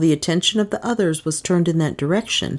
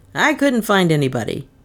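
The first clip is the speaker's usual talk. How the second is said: voice edged with irritation, annoyed. Anderson, entering after slamming the terrace door, reports to the doctor: irritated. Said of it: "he said in an irritated voice".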